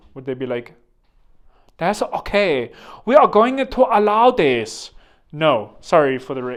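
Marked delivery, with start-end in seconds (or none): 1.8-4.9 loud, slow, deliberate put-on Chinese accent. Imagining how China would react to a US-owned island, in a put-on Chinese accent. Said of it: "these are my Chinese accent".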